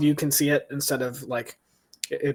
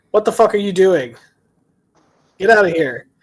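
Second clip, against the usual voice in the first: loud, high-pitched, furious angry shout; 6 semitones higher, 11 dB louder than usual. Voicing a lizard folk creature shouting at the party: lizard folk shouting. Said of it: "it shouts at".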